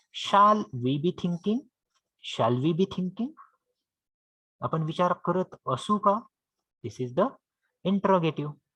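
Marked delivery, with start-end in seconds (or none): none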